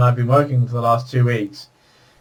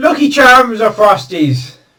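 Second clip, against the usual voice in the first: put-on Irish accent, much higher, louder; 9 semitones higher, 7 dB louder than usual. Changing the subject in a conversation, in an Irish accent. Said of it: "I said Frosties in the Irish accent".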